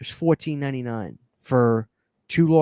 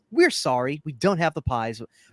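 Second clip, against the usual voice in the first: automated, artificial machine-like voice. Retelling a Taco Bell drive-thru order, imitating the AI drive-thru woman. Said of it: "Don't listen to her".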